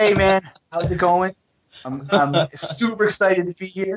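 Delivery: winded, breathless, high-pitched, still catching breath. A guest arriving on a show right after giving a class, out of breath. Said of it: "I got to get my breath back".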